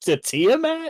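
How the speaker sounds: shocked, incredulous character voice, high and loud.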